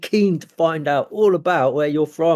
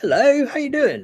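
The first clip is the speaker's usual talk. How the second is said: very high, eager, happy, enthusiastic; 9 semitones higher than usual. Describing how a character greets someone: Kendall's enthusiastic way. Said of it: "that Kendall way of just being like enthusiastic".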